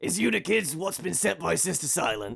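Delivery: rough, gravelly, gravel-throated calling voice. Voicing a stranger shouting to the arriving kids, in a gravelly shout. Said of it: "shout in a gravelly voice".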